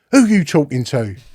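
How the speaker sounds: ordinary delivery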